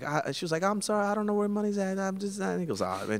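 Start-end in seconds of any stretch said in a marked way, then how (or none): 0.6-2.5 high, mock crying through tears. Retelling a confrontation, speaker quotes the woman's apology, imitating her crying. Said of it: "So she's crying".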